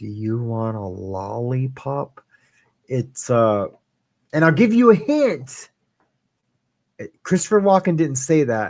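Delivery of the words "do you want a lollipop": slow, exact, carefully precise delivery. Quizzing the audience on a movie: imitating a movie line. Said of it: "but he said it just like that".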